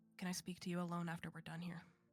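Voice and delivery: low, quiet voice. Voicing a character asking another to talk alone: low voice. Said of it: "And just in a low voice".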